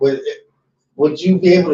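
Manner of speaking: hiccuping speech, broken up by hiccups. Speaker asks the other person a question while hiccuping. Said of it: "Sorry, I got hiccups".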